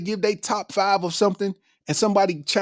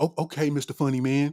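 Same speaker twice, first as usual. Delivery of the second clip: mock-condescending tone, much slower; 6 semitones lower, 4 dB quieter than usual. A comedian imitating people in establishments who doubt him, mock-condescending. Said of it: "kind of condescending the way they say it".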